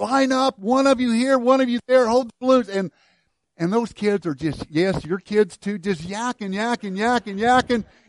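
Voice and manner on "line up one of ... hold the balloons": mock, high, loud shouting. Retelling a water balloon toss with noisy kids: imitating someone yelling at kids. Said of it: "I'm yelling and I'm screaming at them".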